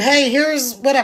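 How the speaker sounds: ordinary talk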